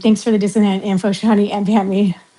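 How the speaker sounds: normal talking voice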